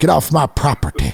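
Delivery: put-on voice of an old grandfather. Show the voice you always do of your grandpa, imitating grandpa's voice. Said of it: "So I always do that voice".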